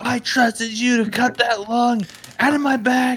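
put-on high, furious yelling. A player's character turns around and starts yelling at Godvin, yelling angrily. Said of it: "I start yelling at Godvin".

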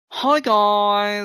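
campy put-on voice, high, "guys" stretched. Reading out someone's message aloud: camp put-on voice. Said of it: "I'll do it in a camp voice".

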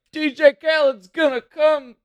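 very high, slow, drawn-out call. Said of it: "He's like".

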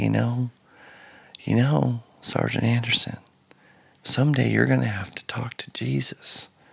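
mild, soft-spoken, quiet voice. Retelling what a young sergeant used to say: imitating a soft-spoken sergeant. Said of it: "he had a soft-spoken voice".

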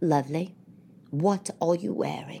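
soft voice laced with disdain. Retelling what a man asked on seeing the speaker's outfit, imitating his disdainful tone. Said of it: "That immediate sound of disdain to his voice".

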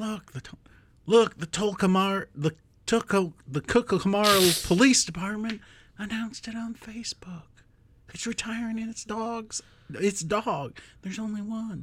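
put-on impression voice, mumbling and drifting. Reading a news story aloud as Joe Biden: Joe Biden impression drifting. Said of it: "I completely left Joe a while ago".

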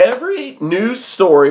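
voice breaking mid-phrase. Ranting to listeners about news stories from Colorado, voice cracking. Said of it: "My voice cracked".

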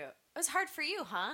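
biting, sarcastic mock sympathy, very high pitch. Retelling own reply to mom on a phone call: retelling own sarcastic remark. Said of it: "'Cause I'm a little sarcastic when".

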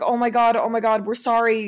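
ordinary delivery

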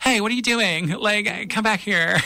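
put-on very high, girlish, youthful twenty-something woman voice. Describing a dubbed show, imitating a character's mom who sounds young: imitating mom's young-sounding voice. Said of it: "Her voice is like a 21-year-old woman".

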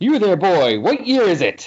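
put-on creepy, high, swooping old-miser voice. Discussing Adam Warlock coming back out of the pyramid: Ebenezer Scrooge impression. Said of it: "He's doing his Ebenezer Scrooge impression".

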